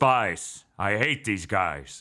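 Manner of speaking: drawn out low and slow. Imitating an actor doing a Harrison Ford impersonation as Bond. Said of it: "still doing his fucking Harrison Ford impersonation".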